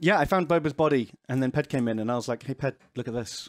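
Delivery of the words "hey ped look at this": creepy voice, low and very hushed. Retelling calling someone over to look at a body, in a put-on creepy voice. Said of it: "he says it in such a creepy voice".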